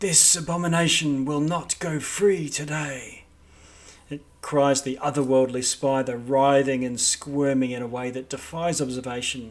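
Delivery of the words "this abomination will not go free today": whispering voice. Voicing a voice heard in the players' heads: whispering voice. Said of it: "You hear this voice whispering in your head".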